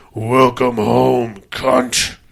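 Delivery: deep, low, disembodied horror-movie entity voice. Retelling a movie's final scene, the speaker quotes a voice, in a deep voice. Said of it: "this deep voice goes".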